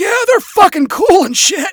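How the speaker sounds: raspy, gravelly voice, very loud and high. Narrator voicing the alligator man's friend chiming in: gravelly voice. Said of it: "his friend added in a gravelly voice".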